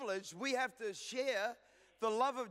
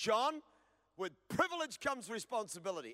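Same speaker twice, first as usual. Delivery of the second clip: ordinary talk, nothing marked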